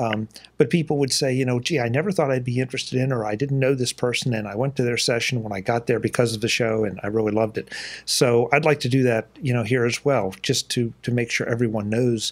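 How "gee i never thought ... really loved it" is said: ordinary talk, nothing marked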